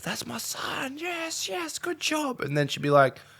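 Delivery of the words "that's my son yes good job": put-on very high, very slow, stretched-out supportive yell. Speaker describes their mum in the stands, imitating mum yelling. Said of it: "she'll yell out".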